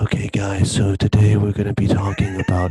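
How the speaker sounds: voice dropped low and pushed. Recalling someone whose voice used to bother the speaker, doing a Leafy impression. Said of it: "his voice would be like this".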